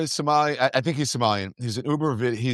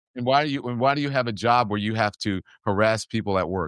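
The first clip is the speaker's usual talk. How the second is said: ordinary delivery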